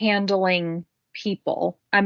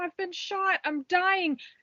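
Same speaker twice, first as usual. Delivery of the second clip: very high, panicked screaming; 11 semitones higher, 7 dB quieter than usual. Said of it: "if you keep screaming".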